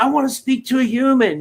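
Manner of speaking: aggravated, irritated voice. Retelling asking for a human on customer service calls: imitating own aggravated demand. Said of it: "I get so aggravated".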